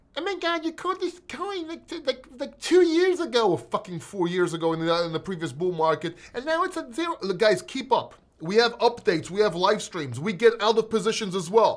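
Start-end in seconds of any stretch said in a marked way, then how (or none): 0.1-7.1 taunting, mocking voice, pitched up. Speaker mocking viewers who comment on his videos calling him a scammer: mocking commenter voice. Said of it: "commenter voice".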